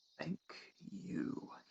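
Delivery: barely voiced, whispered mutter under the breath. A tabletop player's character after getting gold off a person, muttered under breath. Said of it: "he says under his breath".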